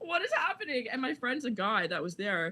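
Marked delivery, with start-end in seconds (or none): 0.0-0.9 play-acted stunned disbelief, very high, laughing. Retelling being thrown against a wall: imitating own shocked laughing. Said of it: "I was laughing because I was in such shock".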